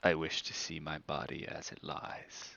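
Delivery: hushed, low, close whisper. Voicing Sergei, who whispers in the listener's ear: Sergei whispering. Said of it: "he whispers in your ear".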